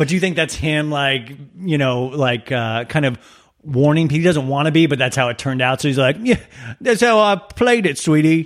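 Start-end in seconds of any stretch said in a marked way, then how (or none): 6.2-8.5 clumsy, shaky-sounding put-on Australian accent. Quoting him on how he played it, in a bad Australian-ish accent. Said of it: "I'm so sorry for that accent".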